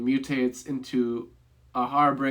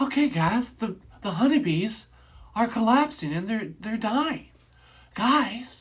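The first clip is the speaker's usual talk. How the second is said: stiff, wooden delivery, a touch higher; 9 semitones higher than usual. Imitating an actor's line delivery from a movie: Mark Wahlberg impression. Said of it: "that's my best impersonation of it".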